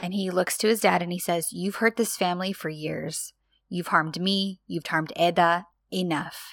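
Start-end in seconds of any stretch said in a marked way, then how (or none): 1.5-6.5 put-on quiet, dangerous, menacing tone. Retelling a son confronting his father, retelling quiet, dangerous speech. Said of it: "He's speaking quietly and dangerously".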